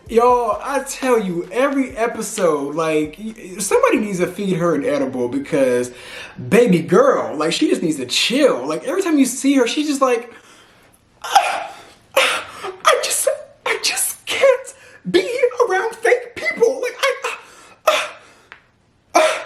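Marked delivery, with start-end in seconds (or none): 11.2-19.4 very high, laughing-sobbing, distressed Southern woman's voice.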